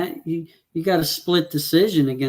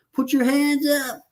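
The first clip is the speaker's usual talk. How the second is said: high-pitched screaming yell. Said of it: "his corner screaming at him".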